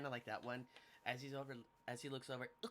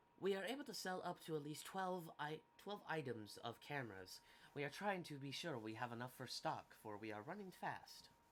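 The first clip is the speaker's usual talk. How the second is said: mechanical droid-style robot voice; 4 dB quieter than usual. Game master voicing a droid translating for a shopkeeper, droid voice.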